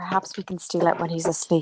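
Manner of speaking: quiet whispered voice. Voicing a character whispering a plan to another character: whispering in character. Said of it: "whispers to, um, Cal, she's like".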